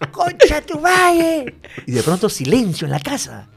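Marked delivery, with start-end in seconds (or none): 0.1-1.6 put-on childlike shout. Retelling how as a child he shouted at his brothers: imitating his own childhood shout. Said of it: "les grito".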